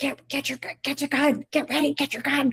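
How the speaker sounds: high, hushed whisper-shout with words tripping. Retelling telling a hunting partner to get his gun: retelling a whisper-yell. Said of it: "trying to whisper yell".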